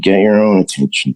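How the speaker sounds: muttering under breath. Retelling a reply to an airport announcement, imitating muttering under breath. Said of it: "under my breath".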